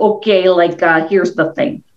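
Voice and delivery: imitated Chicago accent. Retelling what the fire chief said taking the speaker aside: imitating a Chicago accent. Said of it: "he has this Chicago accent".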